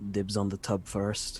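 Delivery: quiet, secretive half-whisper. Leaning over to another player's character in a game, half-whispering. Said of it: "just whisper".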